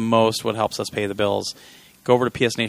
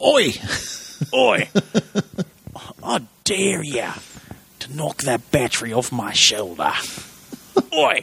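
Australian accent swinging up high; 5 semitones higher than usual. Showing someone how to just be Jacko, in a Jacko voice with an Australian accent. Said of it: "I was supposed to do an Australian accent tonight".

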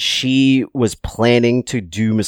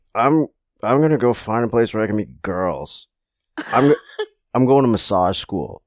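imitated drunk, stuporous voice. Retelling an answer given to a buddy on vacation: imitating a drunken stupor. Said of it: "in a very drunken stupor".

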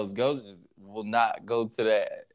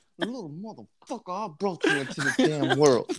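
put-on violent whisper, higher; 5 semitones higher than usual. Imitating a TV character threatening his son: imitating Ghost's violent whisper. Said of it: "he gotta do the violent whisper to Tyreek".

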